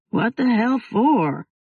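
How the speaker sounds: through a yawn. Answering his friend's phone call from sleep, yawning. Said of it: "Jake yawned".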